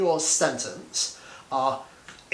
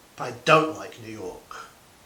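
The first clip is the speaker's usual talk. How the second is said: falling tune, New York drops at the close; 2 semitones higher, 6 dB louder than usual. Teaching English intonation with a contrasting example, falling intonation. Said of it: "anything positive you're saying should have rising intonation".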